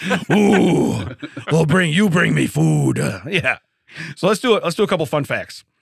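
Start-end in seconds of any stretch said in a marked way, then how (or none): 0.4-3.0 put-on drunk monster voice, much slower. Joking about being hungry and demanding food: drunk Cookie Monster voice. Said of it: "I sound like a drunk cookie monster".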